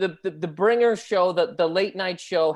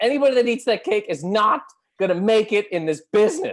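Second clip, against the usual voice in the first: put-on, enraged, furious yelling and screaming; 3 semitones higher, 4 dB louder than usual. Retelling how a man screamed at everybody eating cake, imitating someone screaming. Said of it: "He starts screaming at everybody".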